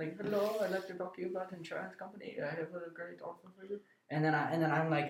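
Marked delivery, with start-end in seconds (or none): 0.0-3.8 put-on woman's voice, much quieter. Asked to redo an insurance call, imitating an indian lady caller. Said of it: "Do that again".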